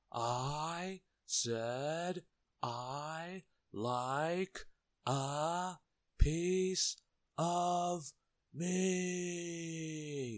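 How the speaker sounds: slow, high-pitched bellowing roar, "meat" drawn out. Reading a character repeating his order to a shopkeeper who pretends not to hear, roaring. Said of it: "roared Mr".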